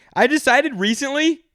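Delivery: very high, loud shouted outburst. In conversation, the speaker yells, then apologizes for it: yelling. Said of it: "sorry for yelling".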